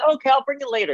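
very high voice, dripping with sarcasm. Retelling how he answered after looking at her and then at me, mock-sarcastic reply. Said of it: "it's so sarcastic".

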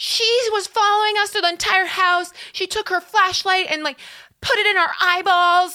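mock shrieking tirade, very high and shrill. Retelling how the head of security screamed at a guest: imitating someone screaming. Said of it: "She's just screaming at this guy being like".

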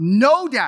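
acted angry little boy, loud and furious. Retelling a son's complaint while building a toy: imitating a furious child. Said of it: "my son is getting furious with me".

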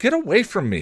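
very high-pitched, shrill yell. A teenage girl pushes away a man who whispered in her ear, yelling. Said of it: "she yelled".

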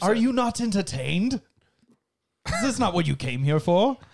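high, daft, silly British sketch-comedy voice. Speaker introduces the next part of the show; Monty Python voice. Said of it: "i did uh that gladiator reference in like a monty python voice".

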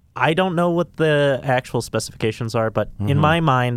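plain

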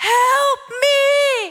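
high, pleading, acted mild cry, me stretched long. Retelling running in the shed and crying out: retelling her own scream.

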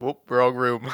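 mock very low, bone-dry, flat deadpan. Repeating a line from the game again: imitating a deadpan line. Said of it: "So deadpan".

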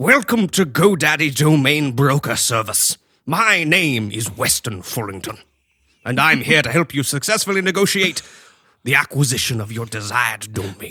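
put-on loud, stuffy, posh old-money gentleman voice. Reading aloud an email from a domain broker, imitating Weston Fullington. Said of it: "In this voice".

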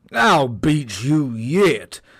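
loud, slow, drawn-out, carrying shout. Narrator voices the tiger speeding off to the next marker: shouted. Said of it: "shouted the tiger".

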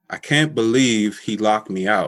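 ordinary talk

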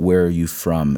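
ordinary talk

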